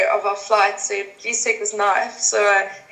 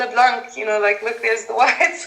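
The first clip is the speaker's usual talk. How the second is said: ordinary delivery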